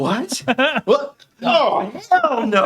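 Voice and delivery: acted, very high, stretched-out, angry disbelief. Retelling a reaction to a father's joke: retelling an angry reaction. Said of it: "I just got pissed".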